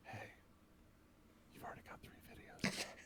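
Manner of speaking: close, intimate, breathy whisper. Suggesting what to tell a partner who makes content, whispering in their ear. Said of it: "whisper in their ear like".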